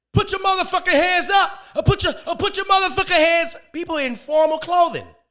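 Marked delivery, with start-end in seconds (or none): 0.2-3.6 high, hyped-up hip hop party DJ voice. Retelling a wedding reception DJ's lines: imitating a hip hop party DJ. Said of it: "he's talking like he's at a motherfucking hip hop party".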